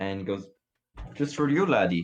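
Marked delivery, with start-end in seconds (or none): 1.1-2.1 high-pitched put-on Irish brogue. A game master voices the innkeeper answering a player asking for a room: Irish-sounding innkeeper accent. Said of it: "innkeeper is Irish".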